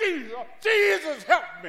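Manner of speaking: loud, high-pitched hollering.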